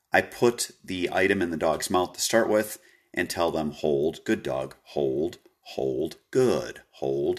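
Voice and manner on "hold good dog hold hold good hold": calm, gentle, slow, soothing voice. Training a dog to hold an item in its mouth, speaking in a soothing voice. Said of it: "Again, soothing voice".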